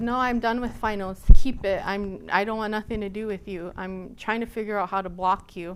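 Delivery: normal talking voice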